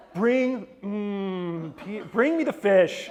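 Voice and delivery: fake sarcastic delivery. Retelling a Bible scene as she would have played it: playing a sarcastic Jesus. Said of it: "maybe your Jesus isn't as sarcastic as mine".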